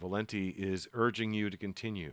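usual speaking voice

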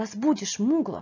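plain reading voice

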